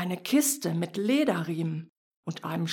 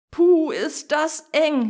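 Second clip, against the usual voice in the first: whiny, cramped, high, drawn-out whine; 9 semitones higher, 7 dB louder than usual. A bright thing squeezes out of a box, whining. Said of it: "jammerte das helle Ding".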